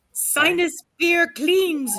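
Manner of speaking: very high, pitched way up character voice. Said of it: "like, a Yoda voice?".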